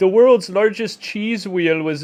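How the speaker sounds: loud, booming Minnesota accent. Joking about a channel-points reward, doing a put-on Minnesotan accent. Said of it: "you got it down already".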